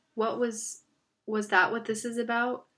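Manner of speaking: plain reading voice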